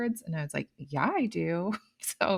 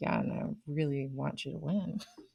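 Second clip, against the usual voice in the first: mock under-breath mutter, lower and quieter; 3 semitones lower, 8 dB quieter than usual. Retelling own aside after encouraging a child: imitating muttering under breath. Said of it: "under my breath".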